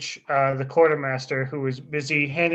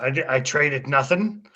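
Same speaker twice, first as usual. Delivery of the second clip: creature voice like a goblin. Voicing the goblin quartermaster denying a trade: goblin quartermaster voice. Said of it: "he's gonna look and go".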